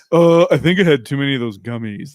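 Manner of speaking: goofy, dopey, dim-witted doofus voice. Acting out how his wife imitates him, mocking doofus voice. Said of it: "That's how she makes me sound".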